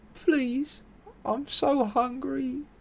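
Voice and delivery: very high, slow, drawn-out pitiful begging. Voicing a character begging for coin with a puppy-dog stare: pleading puppy-dog beg. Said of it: "puppy dog stare, and he's like".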